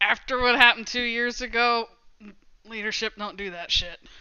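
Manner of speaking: ordinary talk, nothing marked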